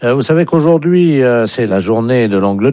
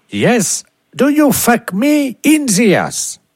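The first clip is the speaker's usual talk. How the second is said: much higher fake English accent. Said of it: "vous serez appelé par un Anglais".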